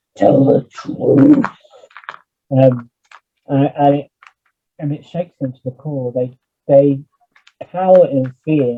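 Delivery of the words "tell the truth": rasping, rough, high, creaky character voice. Narrator voices Killian calling from the corridor to the players, Killian's booming voice. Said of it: "you hear this booming voice of Killian".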